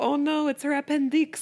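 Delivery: high, put-on, storybook-style French accent. Quoting a line from a children's book in a put-on French accent. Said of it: "you read that in that accent".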